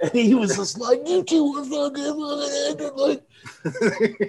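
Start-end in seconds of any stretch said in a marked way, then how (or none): 1.1-4.3 mock, high, drawn-out, heated yelling. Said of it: "he's screaming at us".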